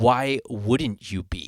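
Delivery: very slow, dramatic, drawn-out delivery. Reenacting once more what the sound guy said: dramatic reenactment of the sound guy. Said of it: "I'm gonna reenact it one more time".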